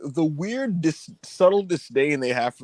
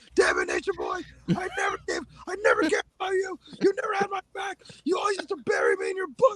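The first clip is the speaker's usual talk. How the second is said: play-acted very high yell, rising and swooping; 6 dB quieter than usual. Retelling a wrestling promo where two men yell: imitating Mick Foley yelling. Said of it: "they're just yelling at each other".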